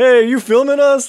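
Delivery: loud, shrill, high-pitched mocking shout. Retelling teenagers in a passing car mimicking the guy, mocking imitation of the guy. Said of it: "started like imitating the guy".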